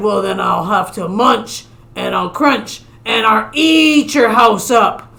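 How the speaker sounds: big, bad storybook shark villain voice. Reading a story aloud, the big bad shark answers the little fish: big bad shark voice. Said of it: "He got in his house and he was about to take a nap when suddenly the big bad shark came along. / He got in his house and he was about to take a nap when suddenly the big bad shark came along. Little f".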